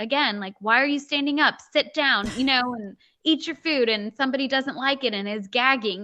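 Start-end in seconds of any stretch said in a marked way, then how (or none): 0.6-3.9 half-hearted, mild, pitched-up yell. Retelling how the husband yells at a child during family dinner: imitating husband yelling. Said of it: "my husband starts yelling".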